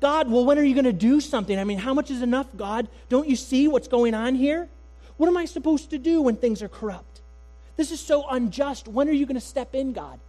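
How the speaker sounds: loud, high-pitched voice, sounding impatient.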